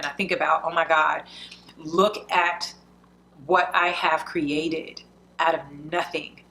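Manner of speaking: tearful, crying through words, voice breaking. Speaker thinking about how blessed they are, crying while speaking. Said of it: "I'm crying. I'm instantly crying".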